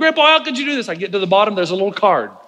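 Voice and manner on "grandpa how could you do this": put-on kid voice, high, disappointed, protesting yell. Retelling opening an empty gift box from grandpa: imitating a yell. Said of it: "I'm yelling".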